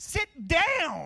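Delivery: put-on high California Valley Girl voice, drawn-out falling. Retelling what a young girl said to a man, in a Valley Girl voice. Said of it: "in the best California young girl".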